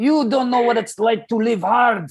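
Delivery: put-on thick Moroccan accent. Speaker retelling what a Moroccan man told him, thick Moroccan accent. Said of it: "thick uh, accent".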